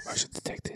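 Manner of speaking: soft, unvoiced whisper under the breath.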